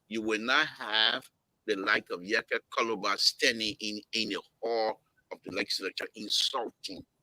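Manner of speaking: very peaceful, calm, unheated reasoning tone. Speaker addressing two guests he calls brothers and friends, very peaceful tone. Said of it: "in a very peaceful tone".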